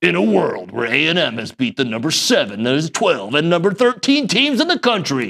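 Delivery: epic movie trailer announcer narration voice. Showing a co-host how he does movie lines, in a movie trailer voice. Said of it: "I was doing more like trailer voice".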